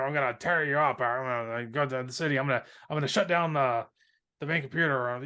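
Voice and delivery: rough, raspy villain voice. Describing a battle scene, the speaker quotes the villain's lines in a gravelly bad-villain voice. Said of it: "He's just has these very gravelly bad villain voice".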